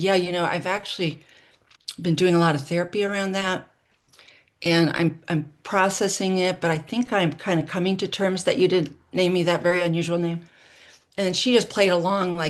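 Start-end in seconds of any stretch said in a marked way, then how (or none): none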